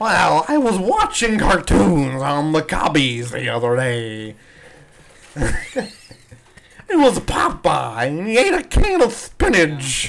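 very slow, bad baseball-guy voice, every word dragged out. Doing an impression of Harry Carey talking about cartoons: Harry Carey voice. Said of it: "I think Harry Carey talks like this".

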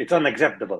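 put-on Italian New York accent. Prompted by the host for an impression, a guest imitates an italian accent. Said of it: "that was Italian".

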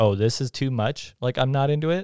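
ordinary talk

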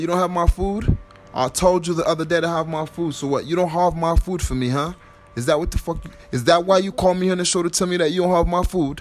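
heated, confrontational rant. Demanding food owed in an acted quarrel: angry raised voice. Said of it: "calm your voice down".

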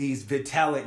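ordinary talk

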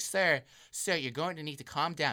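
mock annoyed yet staying professional tone. Retelling how she stayed professional with an unruly man: mock-annoyed but staying professional. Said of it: "she's like getting more and more like annoyed".

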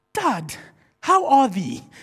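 put-on British accent, sing-song with swinging pitch. Retelling a young son's reply after picking up grandparents' accent: imitating a child's uk accent. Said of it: "he picked up their accent".

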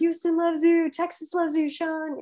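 very high-pitched, shrill yelling. Retelling how the actress playing the older interviewer yelled, imitating someone yelling. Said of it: "she was like yelling like".

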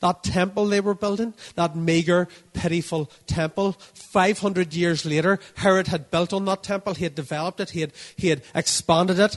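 preacher's voice building up, loud and high.

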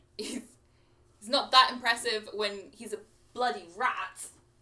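very loud, competitive yell. Playing a competitive character calling out after a departing guard: yelling after someone. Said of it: "she just kind of yells after him".

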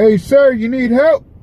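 yelling. Telling a story, calling out to an old guy ghost riding his car, yelling. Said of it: "I don't know why I'm yelling".

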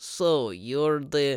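really bad, clumsy fake Russian accent. Imitating a Russian guy interrogating the movie's main character, in a really bad Russian accent. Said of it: "Just imagine a really bad sounding Russian guy".

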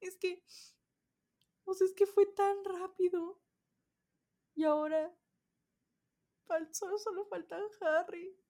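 very high-pitched speech through tears. Recording a video at the end of their summer: crying while talking. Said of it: "Estoy llorando en este momento".

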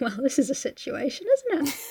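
soft, sad, downcast, sorry-sounding understatement. Describing how she reacts in the scene, imitating a sad tone. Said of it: "she's just kind of like sad there".

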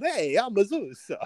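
put-on very high, slow, flamboyant camp accent. Recalling him as Zeus on Thor, in his Con the Fruity accent. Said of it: "his Con the Fruity accent on Thor".

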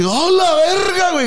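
play-acted very high, very slow, drawn-out frightened yell. Telling about the plane's sudden movement, retell your frightened scream. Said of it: "Grité así".

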